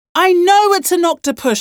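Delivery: high-pitched, loud shout. A mother with an octopus on her arm answers the father: shouting. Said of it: "shouted Mum".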